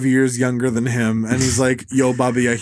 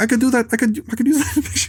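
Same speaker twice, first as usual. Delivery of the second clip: very high-pitched voice; 11 semitones higher than usual. Imitating Scorsese reacting to Cassavetes movies: Scorsese as Bill Burr voice. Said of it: "I love doing Scorsese as Bill Burr".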